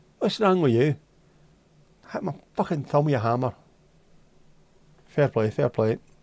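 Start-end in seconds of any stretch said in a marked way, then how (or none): 0.2-3.5 put-on Scottish-accented voice. Joking about how Portuguese carpenters swear, acting one out: Scottish accent. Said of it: "they always swear in a Scottish accent".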